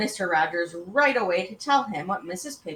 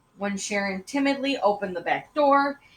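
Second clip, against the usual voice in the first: usual speaking voice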